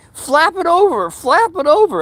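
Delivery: mock scream, very high-pitched and drawn out. Retelling a foot injury as Marcia screamed: imitating someone screaming. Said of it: "she's screaming".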